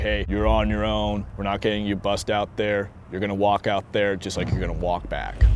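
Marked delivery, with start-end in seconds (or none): none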